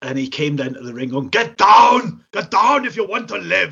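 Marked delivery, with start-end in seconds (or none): 1.3-3.7 put-on loud, high soldier voice with German accent. Retelling a wrestler coming down to the ring: imitating Brad as a German soldier. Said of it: "He was like a German soldier sort of thing".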